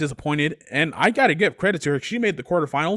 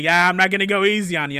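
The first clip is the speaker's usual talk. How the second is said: put-on joking, playful teasing tone. Recapping a match, speaker quotes the little brother to the big brother, retelling a joking line. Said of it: "And Kenny's like jokingly".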